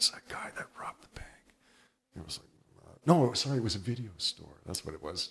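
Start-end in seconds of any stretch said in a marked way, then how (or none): 0.0-1.3 put-on mock whisper, much quieter. Speaker retells people whispering about him afterward, imitating people whispering. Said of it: "people would be whispering and going".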